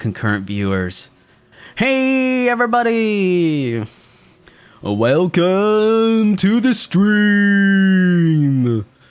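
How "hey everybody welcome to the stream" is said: cheesy announcer voice, very high, very slow, drawn-out. Streamer greeting viewers at the start of the stream, cringe announcer voice. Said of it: "That's my cringe announcer voice".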